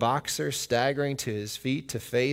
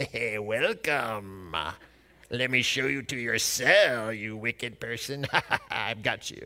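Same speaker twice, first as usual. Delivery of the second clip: devilish cartoon voice. Mocking cartoon pictures of Satan welcoming people to hell, in a Satan impersonation. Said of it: "That's my best Satan impersonation".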